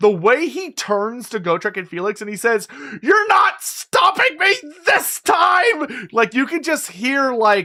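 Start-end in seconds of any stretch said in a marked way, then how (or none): 3.0-6.1 put-on very high, fed-up, angry, terrified defiance. Quoting Thanquol turning to Gotrek and Felix, imitating him frustrated, angry, terrified. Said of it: "sells it so well of just how frustrated, angry, and terrified".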